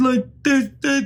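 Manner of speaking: high, garbled, mumbled, clenched-jaw voice. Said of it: "this is literally how he talks in the movie".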